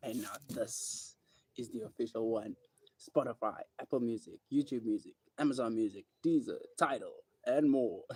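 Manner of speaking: radio commercial ad-read announcer delivery. Announcing where the new single can be streamed, sounding like a commercial. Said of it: "I sound like a commercial on my own".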